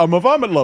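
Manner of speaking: bad, nebbishy put-on New York accent. Retelling a caller's line in a terrible New York accent. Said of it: "He would say that in that terrible New York accent".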